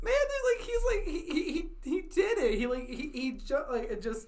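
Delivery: tearful, high, halting, choked up, catching on every word. Describing a character cheering at the end, choked up, near tears. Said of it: "Are you crying?".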